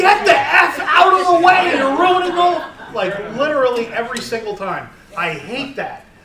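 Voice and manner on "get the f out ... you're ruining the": very loud, high-pitched scream. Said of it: "literally scream at the T V".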